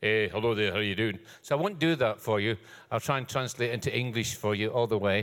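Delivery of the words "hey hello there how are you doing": rattled-off home accent, words run together. Speaker explaining their home accent, showing how people there talk: fast home accent. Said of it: "usually they speak a bit faster, like".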